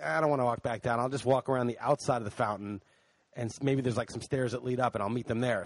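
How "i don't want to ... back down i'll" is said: usual speaking voice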